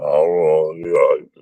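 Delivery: low, slow, scary robotic voice. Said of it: "He talks really slow, scary".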